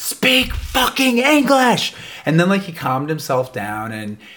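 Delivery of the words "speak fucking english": play-acted furious, all-out, shrill high-pitched scream. Recounting a man screaming at the others in the basement: retelling a scream. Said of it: "he definitely screamed at them".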